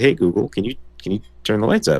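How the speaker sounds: quiet, hushed, careful voice. Retelling asking a speaker device to raise the lights: imitating own quiet request. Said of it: "I'm trying to be quiet".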